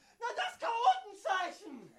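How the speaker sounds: put-on high, loud, slow, indignant old man yell.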